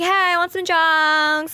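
very slow, hammed-up acting voice, pitched high. Acting out pretending to buy drugs while wearing a wire: playing up a drug buyer role. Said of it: "really play up the role".

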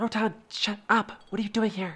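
secretive, voiced stage whisper. From her warehouse window, a character sends a magical message, half-whispering. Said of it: "she's actually going to whisper".

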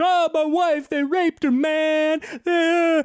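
very high, slow, tearful sobbing voice. Retelling a movie scene, imitating a crying man. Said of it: "but he's crying, he's like".

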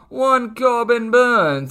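terrible mock old English accent. Previewing the Brewers-Cubs betting line, naming the pitcher in a terrible old English accent. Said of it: "as I use my terrible old English accent".

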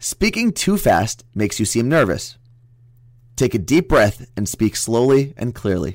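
slow, careful, clear delivery. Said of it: "vote who read this better and more clearly".

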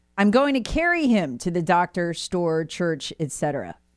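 ordinary delivery

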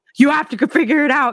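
very high, frantic, panicked delivery. Retelling being stuck in traffic in a minivan with screaming kids: acting out her own panic. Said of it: "And I'm freaking out".

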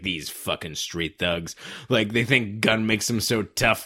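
low, soft, slow villain sneer. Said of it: "he's like".

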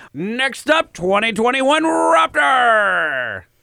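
very high, drawn-out carnival barker call, "raptor" stretched. Talking over existing music, the host announces the next item, carnival barker voice. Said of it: "Are you a carnival barker?".

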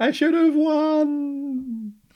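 put-on very high, very slow villain's cry, "won" stretched. Retelling a comic scene where Zotar fades away: imitating a villain shouting.

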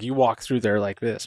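plain

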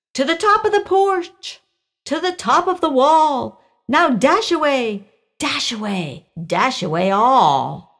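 jolly, lively high calls, drawn out. Narrator reads St. Nick calling his reindeer by name, shouting to reindeer. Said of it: "With a little old driver, so lively and quick, I knew in a moment it must be St. Nick. / He was chubby and plump, a right jolly old elf, / With a little old driver, / With a little old driver, / and h".

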